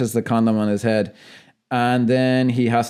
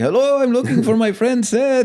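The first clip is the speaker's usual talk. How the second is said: very high, pitched way up, put-on Mexican accent; 12 semitones higher than usual. Retelling a movie scene, quoting the character's line: Cheech Marin's Mexican accent. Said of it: "he has to be putting on that accent".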